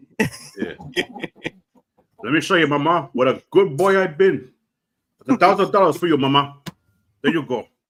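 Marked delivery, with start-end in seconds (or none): 2.2-7.7 put-on gangster voice with Cuban accent. Riffing with a co-speaker on a Scarface-like scene, doing a Tony Montana impression. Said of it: "That was a pretty good impression".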